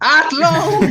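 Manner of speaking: high, loud exasperated laugh. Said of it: "It's like".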